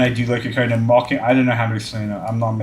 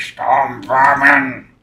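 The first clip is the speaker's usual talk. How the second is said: mock raspy voice, louder; 3 semitones higher, 5 dB louder than usual. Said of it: "his voice get so raspy when he says".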